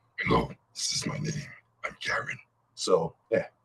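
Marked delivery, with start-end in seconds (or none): 0.2-2.4 breathy, whispered half-wolf, half-man werewolf voice. Showing the voice given to a half-wolf, half-man character: half-wolf, half-man character voice. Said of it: "I kinda gave him a voice".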